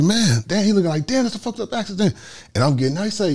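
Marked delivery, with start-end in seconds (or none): 0.0-2.1 high, stunned voice.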